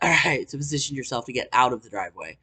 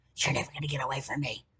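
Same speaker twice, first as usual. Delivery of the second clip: whisper, quieter; 11 dB quieter than usual. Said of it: "whispers in my ear".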